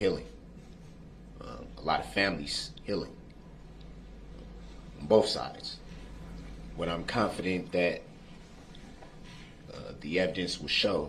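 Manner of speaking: choked-up, halting words, voice breaking. Speaking about families healing on both sides: emotional, voice breaking. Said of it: "sorry, I'm getting a little emotional".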